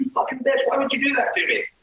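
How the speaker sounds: all-out furious outburst, very high pitch. Retelling confronting a woman who faked seizures, retelling an angry outburst. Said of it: "I just let her fucking have it".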